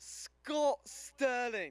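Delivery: put-on British accent. Answering a request for your best british accent: british accent. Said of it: "give me your best British accent".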